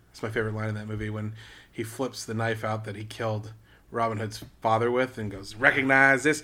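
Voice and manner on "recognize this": put-on booming, very loud, out-of-place Southern American accent. Quoting a favorite movie line with a knife: weird Southern accent. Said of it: "he says it in, like, a weird, like, Southern accent".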